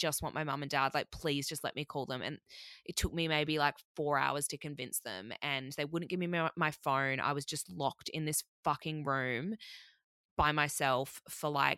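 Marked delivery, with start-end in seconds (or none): 0.0-2.2 imitated tearful, desperate begging. Retelling begging to call parents while bawling: imitating own tearful begging. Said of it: "begging, absolutely begging".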